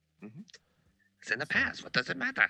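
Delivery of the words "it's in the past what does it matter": put-on pitched-up voice of a wise old baboon. Quoting the teachings of Rafiki to the other speaker: Rafiki impression. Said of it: "That was a good Rafiki impression".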